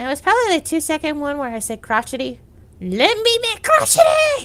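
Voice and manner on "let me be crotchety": very high, shrill, swooping gremlin creature voice. Speaker redoes a line from one of her deleted videos, gremlin voice. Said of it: "I did it in a more gremlin voice".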